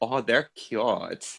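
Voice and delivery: bad, terrible Minnesota accent. Retelling what a Minnesotan woman said to them, in a terrible Minnesota accent. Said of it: "That's a terrible Minnesota accent".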